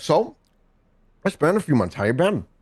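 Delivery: talking through a full mouth of food. Narrator voicing a man who speaks as he takes a bite: talking with a full mouth. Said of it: "and with a full mouth, he's like".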